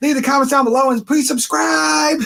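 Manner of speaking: very high, rapid-fire, rushed lisping patter. Describing a woman's usual sign-off, imitating her fast talking with a lisp. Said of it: "she talks really fast and she won't slow down".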